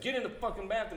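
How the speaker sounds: put-on forceful angry yell. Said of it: "He raised his voice really, like, aggressively".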